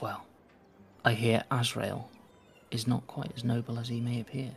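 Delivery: hushed, conspiratorial, gossiping voice. A woman confides in the listener like a co-conspirator, in a lowered, gossiping voice. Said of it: "She lowers her voice as if you're like, you know, friends, like co-conspirators, like gossiping".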